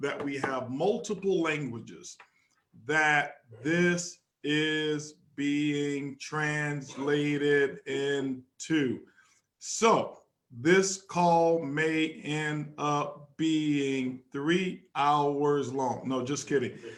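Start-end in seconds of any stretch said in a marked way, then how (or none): 2.8-16.0 very slow, deliberate, unhurried delivery. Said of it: "I'll speak a little slower".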